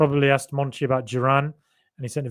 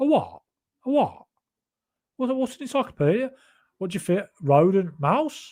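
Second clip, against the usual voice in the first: put-on rounded Solihull Birmingham accent, higher pitch; 6 semitones higher, 3 dB quieter than usual. Showing how a Solihull accent sounds, like Grealish: Grealish-style Solihull accent. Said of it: "Like Grealish".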